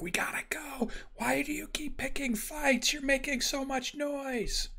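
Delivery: hushed whisper pitched very high. Pressed against a wall, a character speaks to three others, whispering. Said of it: "As he's whispering to these three".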